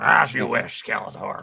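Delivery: loud, rough, booming ring announcer voice. Asked to deliver a reply to Skeletor in different voices, do it as a Vince McMahon impression. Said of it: "I'll do it as Vince McMahon".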